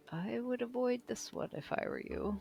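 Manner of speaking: hushed whisper. A character beside you at a cart warns you off, Valivo whispering. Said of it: "kind of whispering".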